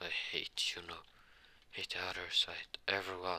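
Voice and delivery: ordinary delivery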